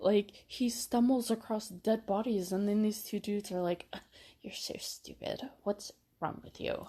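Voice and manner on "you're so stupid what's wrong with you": put-on near-whispered, breathy, hushed girl voice. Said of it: "I love your straight girl voice".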